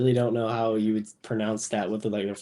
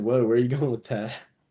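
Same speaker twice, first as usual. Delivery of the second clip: ordinary delivery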